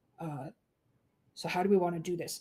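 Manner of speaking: whispering in character. Sneaking back to tell the group what lies inside: whispering in character. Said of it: "I'm going to sneakily back up and whisper to these guys".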